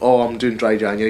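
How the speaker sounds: put-on Dundee accent, put on. Retelling what a coworker said at work, imitating Becky's Dundee accent. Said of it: "She's from Dundee, she has a stupid accent".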